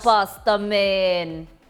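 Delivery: poor, fake Caribbean accent. Describing a favourite pasta dish, the speaker slips into a terrible caribbean accent. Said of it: "my terrible Caribbean accent".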